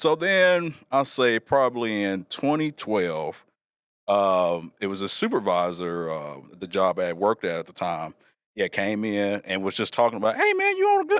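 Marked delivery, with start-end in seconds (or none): 10.4-11.2 very high, top-of-range pitched voice. Retelling a former supervisor coming in to chat, imitating a high-pitched voice. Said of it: "He had a top pitch voice".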